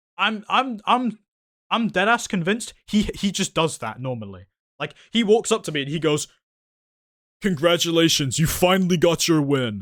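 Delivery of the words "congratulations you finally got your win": narration delivery of an online video intro announcer. Retelling how he walked up to congratulate the speaker: FitMC YouTube intro voice. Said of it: "in the most Fit M C YouTube intro voice".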